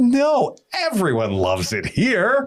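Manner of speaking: mock naive self-satisfied voice. Acting out an owner wearing rose-colored glasses: mock naive self-satisfied owner. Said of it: "put on our rose-colored glasses and be like".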